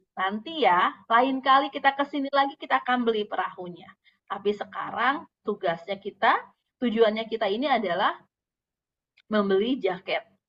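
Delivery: plain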